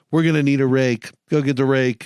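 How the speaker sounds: normal talking voice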